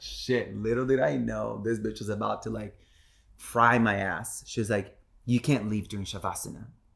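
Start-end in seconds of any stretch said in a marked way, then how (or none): 5.3-6.7 put-on sharp, scolding tone. Retelling what the yoga teacher said: imitating a scolding tone. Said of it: "she said it with such a tone".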